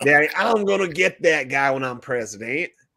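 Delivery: put-on Southern accent, put on. Imagining Bush promising his dad to get Saddam: George W. Bush Southern accent. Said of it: "with their little Southern accent".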